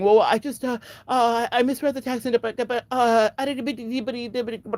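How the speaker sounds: high, stumbling, word-repeating stuttering stammer. Retelling how a man answered when called out: imitating someone stuttering. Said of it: "the amount of stuttering".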